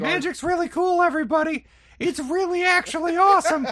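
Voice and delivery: very loud, very high-pitched hollering yell. Yelling to a crowd in character to win them over: yelling in character. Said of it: "I'm yelling that shit".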